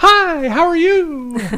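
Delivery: very high, loud, chirpy sales-call voice. Imitating a telemarketer's phone call, in a mock-chirpy telemarketer voice. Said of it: "As soon as you hear that chirpy voice".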